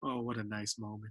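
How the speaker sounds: put-on muttering under breath. Retelling a show where two people hug: Tony muttering under his breath. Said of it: "Tony just under his breath, he just says".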